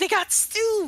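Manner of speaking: very high, thrilled, excited burst. Acting out a character who learns there is stew: excited. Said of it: "my face lights up".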